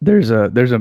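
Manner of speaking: cracking, breaking voice mid-phrase. Starting to make a point when the voice suddenly cracks. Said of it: "my voice just cracked".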